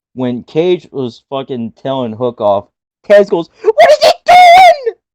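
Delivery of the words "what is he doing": shrill, very high, very loud cry. Recapping a wrestling match, doing a high-pitched Taz impression. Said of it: "Taz's voice got so high in this match".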